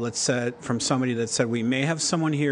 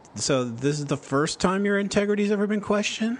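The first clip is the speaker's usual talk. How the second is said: acted, smirky, sarcastic jab with higher pitch; 7 semitones higher than usual. Retelling a lawyer cross-examining a police officer, in a mock sarcastic question. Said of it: "kind of the sarcastic".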